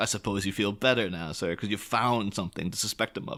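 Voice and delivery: ordinary talk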